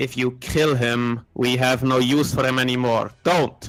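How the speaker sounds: said very loudly. Voicing a character who claps an ally's back and warns him: said very loudly in someone's ear. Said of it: "what you definitely hear very loudly in your ear is".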